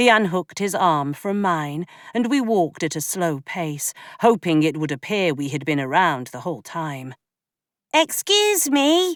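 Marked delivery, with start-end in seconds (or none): 7.9-9.1 very high, piping, raised calling voice. Reading a story aloud, a young girl calling out: high-pitched call. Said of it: "a high-pitched voice called".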